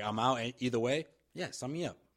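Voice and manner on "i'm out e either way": ordinary talk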